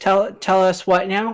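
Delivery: tiny little voice. Narrator voicing a character who speaks up, in a tiny little voice. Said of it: "a tiny little voice just go".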